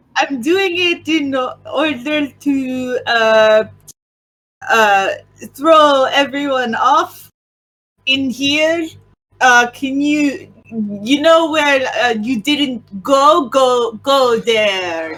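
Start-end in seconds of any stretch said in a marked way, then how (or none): 9.7-15.2 put-on Italian accent over a French accent. Voicing a character telling the others where to go: French guy doing Italian accent. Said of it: "a French guy doing Italian impression".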